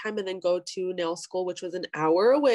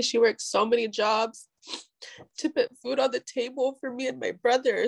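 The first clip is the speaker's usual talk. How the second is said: tearful voice, choking up, on the verge of tears; 4 semitones higher than usual. Telling a personal family story, on the verge of crying. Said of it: "sorry, I'm gonna cry".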